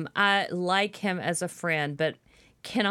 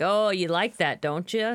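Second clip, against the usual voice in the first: normal talking voice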